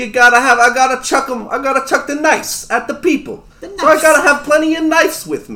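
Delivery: put-on New York accent, small kobold adventurer voice. Playing a knife-covered adventurer in a tabletop game, in a New Yorker voice. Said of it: "I'm small! I'm kinda red! I'm kinda brown! Oh my god. The biggest thing about [name] is he's got knives. He's got knives all over him. ... I watched a YouTube video on how to talk like a New Yorker".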